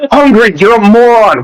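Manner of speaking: exasperated, scolding outburst. Retelling how they yelled at another player after a vote: imitating own past yelling. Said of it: "and I was like".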